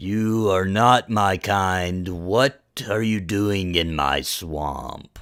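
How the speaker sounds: huge dragon creature voice. Voicing a creature that speaks to the party on a boat, in a booming voice. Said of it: "a booming sound, so loud it kind of quivers".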